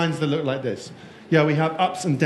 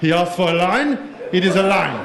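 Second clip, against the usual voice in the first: German-sounding voice. Imitating finance people answering a question, in a German accent. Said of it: "they always have a German accent".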